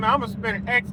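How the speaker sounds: ordinary delivery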